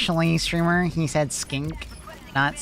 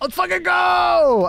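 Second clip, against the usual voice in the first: full, high yell with go stretched out; 5 dB louder than usual. Cheering along with another speaker to get going: yelling. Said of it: "why are we yelling?".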